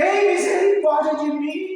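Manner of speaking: high, loud, desperate crying out. The speaker acts out the blind man of Jericho crying out: retelling a desperate shout. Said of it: "O cego de Jericó gritou".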